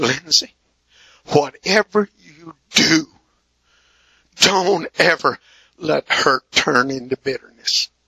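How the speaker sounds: mock earnest, tearful, pleading fatherly voice. Retelling a father's tearful words on a long car ride home: imitating a pleading father. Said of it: "he cried, and he wept, and he pleaded with me".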